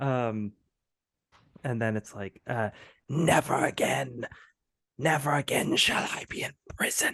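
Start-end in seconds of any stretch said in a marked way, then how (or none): 3.1-7.1 eerie, sultry, whispered character voice. Voicing a freed figure whose voice whispers from behind: whispering character voice. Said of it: "They speak in a voice that ... whispering into your ear".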